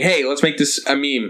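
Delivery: ordinary talk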